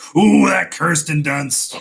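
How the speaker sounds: acted cartoon crook voice. Teasing a co-host about how they said a name: Scooby-Doo villain voice. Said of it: "the Scooby Doo villain of like".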